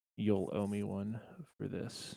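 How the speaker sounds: whispered voice. Game master voicing Ramrath, who walks up behind a player, whispering. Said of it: "Kind of whispers in your ear".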